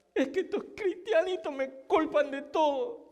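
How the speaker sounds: high, fake sobbing, furious and helpless. Telling a joke, voicing Satan who sits crying with rage: mock crying with rage as Satan. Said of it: "Satanás está llorando con impotencia y con rabia".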